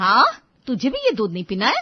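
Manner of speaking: very loud, high, rising scolding yell. In a skit with the family eating at the dining table, Dipti asks someone, shouting. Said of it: "क्यों चिल्ला रही हो?".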